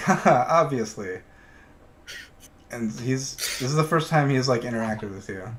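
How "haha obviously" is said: play-acted brief, raised chuckle through the words. Voicing a character agreeing he is the handsomest: little chuckle. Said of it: "he gives a, a little chuckle".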